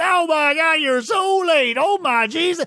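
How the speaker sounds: put-on high, slow, drawn-out hillbilly grandpa voice. Describing keeping up a ruse, the speaker acts out the line like Grandpappy from the Beverly Hillbillies. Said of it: "Not if you say it like Grandpappy from the Beverly Hillbillies".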